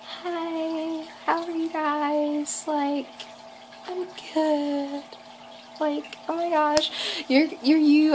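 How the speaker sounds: put-on tiny, trembling, high-pitched nervous voice. Speaker recalls talking at a meet and greet while nervous; imitating a small shaky nervous voice. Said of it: "I talk in such a small voice. And it's like really shaky and it's small".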